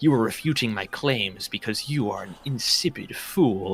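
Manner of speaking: mock pretentious know-it-all voice. Imitating a commenter's way of talking: imitating a pretentious know-it-all. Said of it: "talking like a total fedora tipping doofus".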